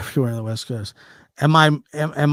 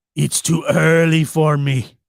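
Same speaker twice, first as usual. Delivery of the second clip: pirate-sounding voice; 2 semitones higher, 3 dB louder than usual. Early in the show, the speaker's voice comes out sounding like a pirate. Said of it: "I sounded like a pirate there".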